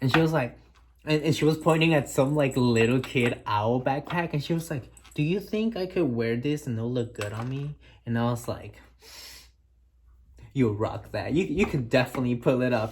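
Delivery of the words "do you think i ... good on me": mock-playful, put-on playful tone. Recounting what a woman suddenly asked the speaker, retelling a playful question. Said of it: "She said it so playfully".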